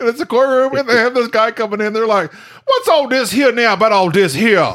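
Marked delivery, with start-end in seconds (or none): 2.3-4.8 overdone, exaggerated put-on Louisiana accent. Describing a courtroom scene full of Louisianans moved to Maine: imitating Louisianans' accent. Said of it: "they all talking like this here now".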